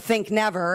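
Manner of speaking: ordinary talk, nothing marked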